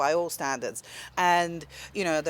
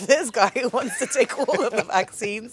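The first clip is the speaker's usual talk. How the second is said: laughing while talking, higher pitch; 5 semitones higher, 4 dB louder than usual. Speaker reacting to a story he finds hilarious, laughing while talking. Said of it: "I'm laughing".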